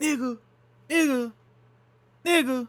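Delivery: put-on very high, shrill, repeated hollering. Describing a man hanging around nearby, retelling a man's yelling.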